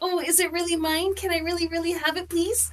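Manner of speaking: put-on excited, high, soft childlike begging voice. Describing what they'll do if she gives it to them, like a little kid at Christmas. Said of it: "like a little kid, you know how at Christmas".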